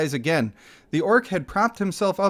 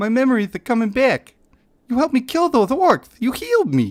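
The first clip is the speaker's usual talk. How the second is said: pitched-up put-on voice, boxer crossed with a frog; 6 semitones higher, 4 dB louder than usual. Voicing a game character as pseudo Mike Tyson and Kermit the Frog voice. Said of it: "Go for pseudo Mike Tyson and Kermit the Frog".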